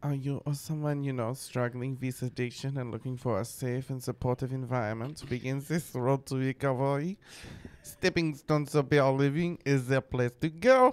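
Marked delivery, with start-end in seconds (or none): 5.7-10.9 loud, put-on French accent. Reading a recovery-home ad aloud in a put-on French accent. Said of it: "that's as far as I can get with the French".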